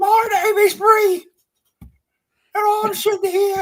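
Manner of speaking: very high, loud put-on voice. An actor describes a role she took as a paycheck, doing a Monty Python voice. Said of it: "it sounds something like Monty Python".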